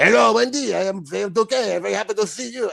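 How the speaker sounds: heavy put-on French accent. Showing a performer's original character voice for a show, heavy French accent. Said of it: "originally it was a heavy French accent".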